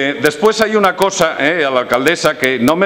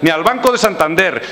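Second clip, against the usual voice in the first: ordinary talk, nothing marked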